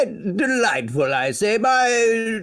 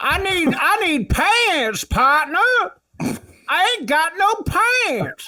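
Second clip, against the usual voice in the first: pitched-up, gummy, toothless prospector voice; 7 semitones higher than usual. Playing a character asking a shopkeeper for pants: Toothless Prospector voice. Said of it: "That's very good, Toothless Prospector".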